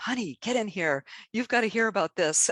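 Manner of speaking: high, excited yelling. Retelling a lady calling her husband inside: imitating someone yelling. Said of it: "yelling at her husband".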